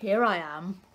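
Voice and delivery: rough, croaky gruff voice. Reading a story, the frog answers Little Blackfish from behind him, gruff frog voice. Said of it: "said a gruff voice".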